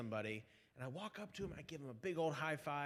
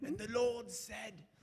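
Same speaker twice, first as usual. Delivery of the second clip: put-on British accent, pitched up, drifting into Australian; 8 semitones higher than usual. Offering to preach for the audience, trying an attempted british accent. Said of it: "That was more like Australian".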